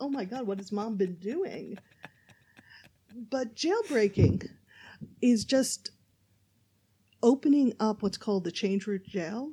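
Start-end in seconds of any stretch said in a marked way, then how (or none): 0.0-1.8 mock shocked reaction. Answering a question and imitating the other speaker sounding shocked: mock shocked. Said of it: "You sound shocked as if".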